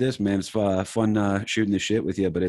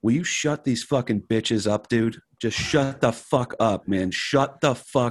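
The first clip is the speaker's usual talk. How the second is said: imitated screaming voice; 2 semitones higher than usual. Retelling being heckled on stage, imitating someone screaming. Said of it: "just sitting there screaming at the one dude".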